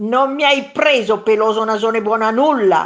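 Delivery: very loud, roaring, taunting monster yell. The second monster yells insults back at the first monster, yelled. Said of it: "urlò il secondo mostro".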